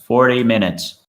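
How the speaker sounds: robotic, machine-like public address announcer voice. Describing a PA announcement in a church, giving the countdown in a robotic voice. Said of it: "and then a robotic voice".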